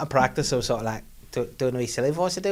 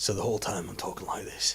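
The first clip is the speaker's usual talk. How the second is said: breathy, whispered, loose Yorkshire accent; 5 semitones lower, 9 dB quieter than usual. A dad showing the accent he slips into, in a Game of Thrones Yorkshire accent. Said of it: "sort of Yorkshire voice is like Game of Thrones".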